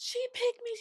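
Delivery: play-acted, tearful, very high-pitched bawling cry. Retelling what a crying girl said behind them: imitating a girl bawling. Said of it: "She was bawling her eyes out".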